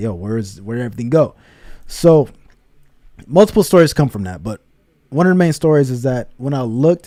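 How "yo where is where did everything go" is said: put-on crying voice. Retelling waking up from a dream at age two: imitating own past crying. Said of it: "I'm just start crying because I'm crying like".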